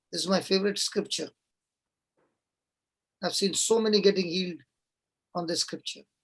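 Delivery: low, hushed, kept-down voice. Reading from Luke near midnight while others sleep, speaking low. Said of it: "your voice went low".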